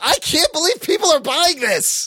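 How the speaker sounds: high, mock yelling in disbelief.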